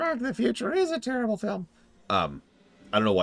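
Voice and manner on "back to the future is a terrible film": bad, very high, spaced-out, drugged-sounding cartoon voice. Reading out a chat message in a put-on voice: drug-addled Mickey voice. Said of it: "you sound like a, like a, a, a drug-addled Mickey".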